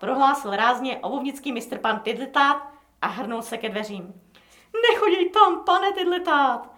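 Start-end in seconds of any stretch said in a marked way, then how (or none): 4.9-6.6 frightened, nearly begging, high and raised pitch. As the shoemaker heads for the door, the frightened barber speaks almost pleading, frightened. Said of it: "pravil téměř prosebně vylekaný bradýř".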